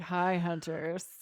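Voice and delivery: sullen, sarcastic deadpan, low, flat and grumpy. Showing what a grumpy intro would sound like, flat grumpy tone. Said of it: "You can be grumpy on the intro if you want. ... That sounds like sarcastic".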